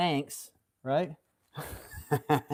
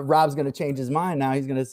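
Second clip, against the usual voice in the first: normal talking voice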